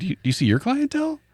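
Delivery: high, hushed, incredulous delivery.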